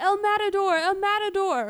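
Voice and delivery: yelled out high and loud.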